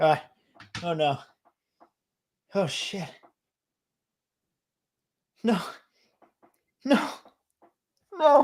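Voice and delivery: very slow, high, drawn-out, about to sneeze, with dread. Mid-conversation, the speaker feels a sneeze building, about to sneeze. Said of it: "I feel like I'm about to sneeze".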